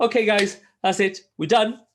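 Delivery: very high, loud mock announcer voice. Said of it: "And she's like".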